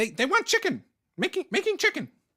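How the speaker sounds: very high, swooping goblin creature jabber. Voicing a goblin heard from the kitchen: goblin speaking in Goblin. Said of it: "you can hear in Goblin".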